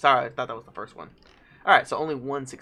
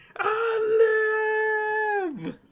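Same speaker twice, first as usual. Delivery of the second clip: tiny dragon voice, very high, long drawn-out i; 4 dB quieter than usual. Recalling Mulan, the speaker answers in a little red dragon voice. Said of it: "Little Red Dragon".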